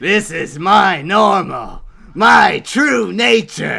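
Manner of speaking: very loud, slow, high, drawn-out yell. Showing the Ripper voice after naming it: Jack the Ripper voice. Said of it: "Ripper voice!".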